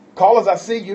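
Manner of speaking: loud, high-pitched calling out.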